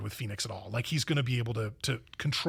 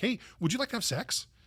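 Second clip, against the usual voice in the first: mock offhand, casual, matter-of-fact, very high-pitched; 10 semitones higher than usual. Retelling a character's proposal in a movie: imitating a matter-of-fact, nonchalant tone. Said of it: "very matter-of-factly, nonchalantly".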